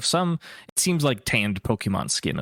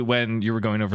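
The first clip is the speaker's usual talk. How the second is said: ordinary talk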